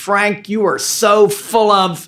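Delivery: put-on scream at top of voice, high and drawn out. Retelling someone interrupting a sermon: imitating Martha screaming. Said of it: "screams out at the top of her voice".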